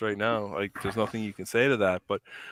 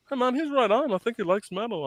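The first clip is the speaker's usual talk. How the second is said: put-on broad, thick Newfoundland accent in a high voice; 13 semitones higher than usual. Retelling a story about his cousin Toby, quoting Toby's thick Newfoundland accent. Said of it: "thick Newfoundland accent".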